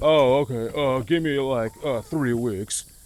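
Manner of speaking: contractor's way of talking. Retelling what the last concrete guy would always say, imitating the concrete guy's voice. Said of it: "In that voice exactly".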